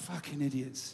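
muttered under breath. Retelling walking off after people deleted the pictures, muttered under breath. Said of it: "under my breath, so they couldn't hear".

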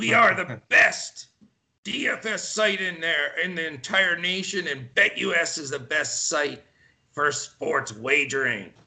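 ad announcer voice, done pretty badly. Speaker redoes the BetUS ad spot, imitating the ad announcer's voice. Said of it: "I'm trying to get that voice of our man".

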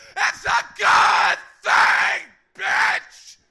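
very loud, high screaming yell at top of lungs.

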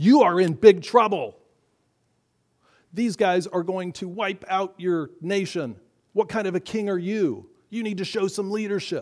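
frightened shouting. Voicing the fear in Saul's mind: imitating fear shouting. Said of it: "he was shouting".

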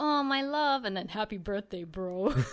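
deep reading voice. Reading a birthday post aloud to another speaker: reading a post in a deep voice. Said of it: "you read it with this deep voice".

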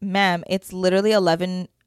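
normal talking voice

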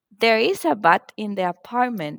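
normal talking voice

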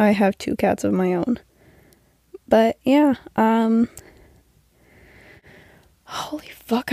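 out of breath, winded. Talking nonstop for almost eight minutes, out of breath. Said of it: "I'm out of breath".

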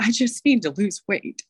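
high, trembling, wobbly, quivery little voice. Retelling what a broken newcomer says when asked for goals, imitating a quivery voice. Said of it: "in their quivery voice".

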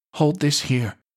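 gentle sorry-sounding tone. Betty instructs a wounded, moaning patient before leaving her, soft and apologetic. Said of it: "Betty instructed softly, in an apologetic voice".

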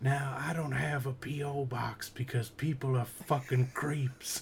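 put-on soft-spoken puppet voice. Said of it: "he's like".

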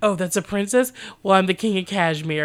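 mocking, sarcastic, scoffing tone full of disbelief. Retelling a man's retort on being told this is a princess, mocking. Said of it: "mocking retort performed".

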